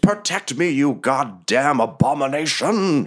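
wizard voice, high, drawn-out scream. Voicing a wizard raising his staff, screaming. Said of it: "and he screams".

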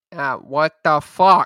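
put-on Chicago accent and pronunciation. Discussing how someone says a phrase, chicago accent. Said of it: "that's exactly what he's talking about".

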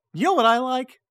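very high, loud, silly squeaky cartoon voice. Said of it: "Can you say the phrase".

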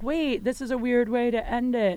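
ordinary delivery

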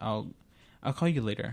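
usual speaking voice

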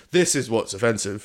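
ordinary talk

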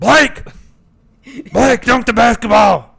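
raspy, high-pitched, slow and loud. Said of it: "That wasn't very good".

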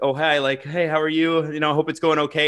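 ordinary delivery

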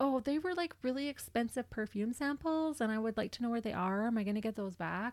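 all worked up, fretful and worried fussing. Retelling how a suspect asked police about her perfume: imitating a worried voice. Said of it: "she's all worried about her perfume".

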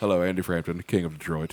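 put-on proper tone. Retelling walking into meetings in other cities, acting all proper. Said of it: "but trying to act all proper".

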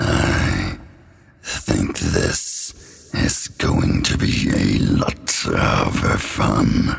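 very low, rough, rasping voice. Voicing Kalimorn speaking to the players: Kalimorn's voice. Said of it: "You hear Kalimorn's voice".

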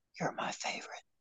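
very soft, barely audible whisper. Telling the other speaker a compliment as a joke: whispering. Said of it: "I'm gonna just whisper it".

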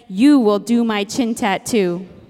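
put-on weighty, full-on grandmotherly tone. Retelling a phone call from her grandmother's younger sister, in her most grandmother tone. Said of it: "in her most grandmother tone said".

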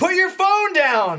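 mock very high, loud, shouted scream. Imagining someone reviewing their own recorded footage: imitating someone screaming. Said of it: "Screaming at it".

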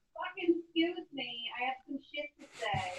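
very quiet cat voice, murmured very softly. Voicing your cat, who has things to say about this episode, like a bad Adriana impression. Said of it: "That sounds like a bad impression of Adriana".

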